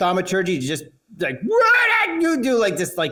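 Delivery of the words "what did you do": very high, piercing scream. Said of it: "just scream, yell".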